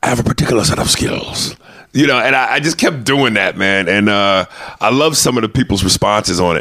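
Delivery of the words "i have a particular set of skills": slightly gravelly delivery. Quoting a line the way he says it: gravelly voice impression. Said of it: "he's got that gravelly voice a little bit".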